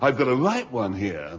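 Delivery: mock very loud man's voice. Recounting buying a hoe, the speaker quotes the seller, retelling someone speaking very loudly. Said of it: "he said it very loudly".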